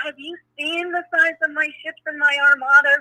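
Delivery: put-on full-throated, loud, boastful screaming. Speaker recalling yelling up at a spaceship while driving, retelling own screaming. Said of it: "I was screaming at this thing".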